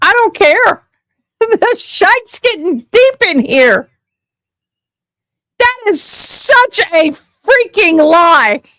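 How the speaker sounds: loud, furious, ranting yelling. Reacting to something called a lie, yelling angrily. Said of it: "Yelling so loud".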